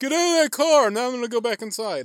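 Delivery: feeble half-hearted yell. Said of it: "just to be like".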